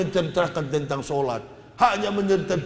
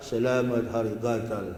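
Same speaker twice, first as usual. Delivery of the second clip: feigned sore-mouth speech, much lower pitch; 5 semitones lower than usual. Showing listeners a trick way to say the Christmas greeting, pretending to have mouth sores. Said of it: "pura-pura sariawan kan".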